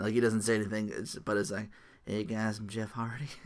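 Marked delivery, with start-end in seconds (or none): 2.0-3.3 soft, hushed film-star voice, easing off. Describing someone's silent entrance, voicing him in a Matthew McConaughey voice. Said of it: "Why'd I make him sound like".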